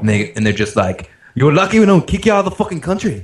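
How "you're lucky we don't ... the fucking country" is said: put-on Irish accent, much higher pitch. Retelling what the Canadians at the airport said on seeing the passport, in an Irish accent. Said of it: "I don't know why I made them sound Irish".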